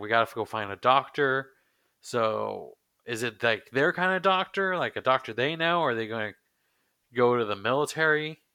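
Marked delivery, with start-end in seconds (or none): none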